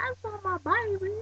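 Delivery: put-on very high, tearful, drawn-out, upset country accent. Describing how her country voice comes out when upset; imitating Blair's upset country accent. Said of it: "Cassie the Piper's um country voice comes out".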